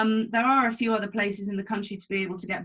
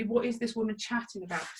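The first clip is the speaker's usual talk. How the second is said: usual speaking voice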